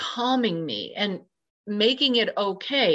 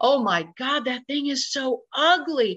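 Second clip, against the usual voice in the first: mock shocked, appalled, disgusted horrified scream; 4 semitones higher than usual. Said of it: "I just screamed it".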